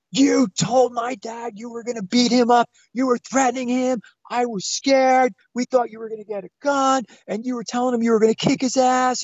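mock top-of-the-lungs scream, very high. Retelling a daughter screaming at her mother and stepfather: imitating a daughter screaming. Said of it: "screaming at the top of her lungs".

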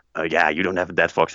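ordinary talk

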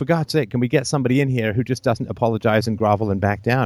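ordinary talk, nothing marked

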